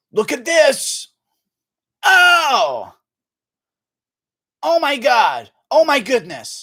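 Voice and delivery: very high, loud, slow, swooping, stretched oh. Doing an impression a donor asked for: Joe Rogan impression. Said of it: "I'm doing a Joe Rogan impression".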